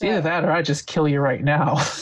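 said jokingly, as a joke. Talking about the only plan there is, said jokingly. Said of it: "I want to say that jokingly".

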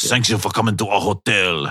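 put-on French accent. Playing a hotel worker serving a guest cheese curds: French accent. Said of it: "My French accent is breaking down".

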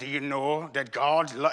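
put-on slow, drawn-out Scottish accent. Imitating a favorite preacher's accent: Alistair Begg Scottish accent. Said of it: "he's got that accent".

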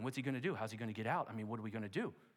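put-on, worried, anxious fretting. Imagining Peter up all night in prison: imagined Peter speaking worriedly. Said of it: "Peter was up all night worrying".

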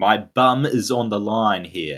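slow, drawn-out, badgering yell. Sharing a favourite film quote, retelling Clifford's yell at them. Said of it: "yelling at them saying".

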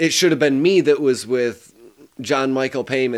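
ordinary talk

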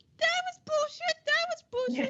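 mock adult complaining, very high grumble.

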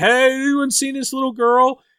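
high, mock yelling, called out loud.

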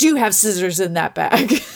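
imitated gruff military voice. Retelling a security officer stopping a bag check: imitating a gruff officer. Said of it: "he was so".

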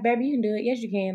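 rah-rah, cheerleader-style, encouraging pep-talk voice. Speaker recalls a man encouraging them about their writing, imitating cheerleader encouragement. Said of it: "Like that whole cheerleader".

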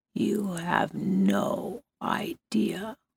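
faint, slow, barely audible whisper. A woman speaks to Blake as he approaches her: barely audible. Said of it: "she frowned and said in a voice so quiet Blake could barely hear it".

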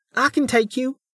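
tiny voice. Reading a story, a figure calls out from the crowd in a tiny voice. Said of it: "came a tiny voice".

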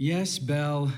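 mumbling, muttering. Answering Belle without turning around, frustrated: mumbling. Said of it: "he mumbled".

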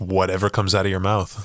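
normal talking voice

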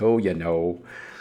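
put-on Wisconsin accent.

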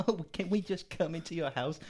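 put-on high, bubbly, giggly American girl voice. Retelling a film scene where two American girls ask to come in: imitating giggly American girls. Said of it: "in a giggly kind of".

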